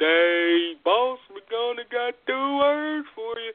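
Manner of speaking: very high dopey dummy voice, stretched "hey". Arguing that a man just sounds stupid, imitate him in a dummy voice. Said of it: "I think he just sounds like a dummy. Like".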